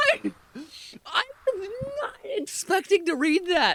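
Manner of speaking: laughing while talking. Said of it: "I'm sorry for laughing so hard".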